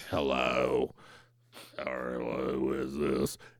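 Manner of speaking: very low, soft voice. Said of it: "Joan goes".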